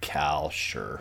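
most exaggerated California-style accent possible. Making a pick in the Pick Five Challenge: most California way possible. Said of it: "you said that in the most California way possible".

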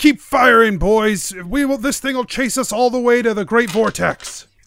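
ship captain voice, called out. Voicing a ship captain running onto the deck: NPC captain yelling. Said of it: "and he yells".

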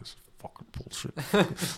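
low, whispered muttering under the breath. Recalling signing up on the phone while others walked past paying: retelling swearing under breath. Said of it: "Like swearing under my breath".

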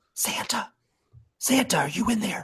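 whispered as hard as possible, loud and breathy. Calling into the dark for santa: loud whisper. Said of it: "I'm gonna whisper out in as loud as I can".

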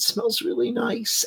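sobbing woman's voice, high, soft and tearful.

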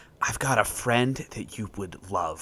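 hushed whisper. Kneeling in character and whispering to a ship's deck: whispering. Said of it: "kneel down and whisper to the deck".

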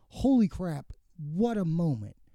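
ordinary talk, nothing marked

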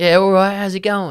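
put-on London accent, pitched very high. Retelling how dad sounds back in London: imitating dad's London accent. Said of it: "when he goes back to London, he sounds more like".

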